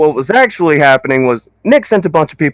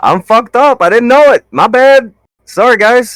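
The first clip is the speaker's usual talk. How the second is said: high, raised voice of sheer panic; 8 semitones higher, 5 dB louder than usual. Apologizing to the group after messing up, panicking. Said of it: "this is what me panicking sounds like".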